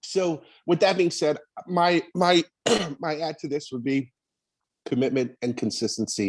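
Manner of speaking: choked-up, voice catching, thick with emotion. Finishing a comment after coughing fits: choked up.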